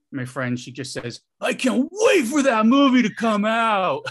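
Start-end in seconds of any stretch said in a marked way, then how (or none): 1.4-4.0 very loud, very high, slow and drawn-out. Retelling what a friend said at the movies: imitating a friend saying it loudly. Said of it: "Says it really loud".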